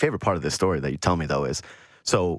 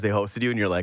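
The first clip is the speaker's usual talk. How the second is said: usual speaking voice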